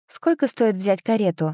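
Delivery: ordinary delivery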